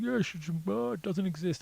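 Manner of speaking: very high-pitched voice. Retelling what an electronics store clerk always said: imitating a shop clerk. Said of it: "the guy'd be like".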